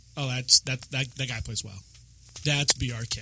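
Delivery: ordinary delivery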